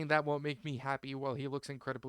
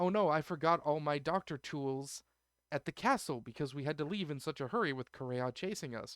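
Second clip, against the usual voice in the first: normal talking voice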